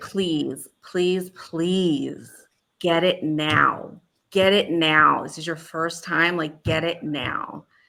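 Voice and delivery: play-acted, slow, earnest, drawn-out pleading. Retelling what a kid across the treatment circle said: imitating a pleading plea. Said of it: "with such, like, pleading in his eyes was like".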